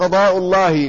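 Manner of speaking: ordinary delivery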